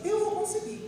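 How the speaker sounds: high, determined little frog voice.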